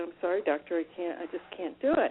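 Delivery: ordinary delivery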